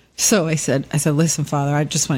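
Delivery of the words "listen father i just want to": normal talking voice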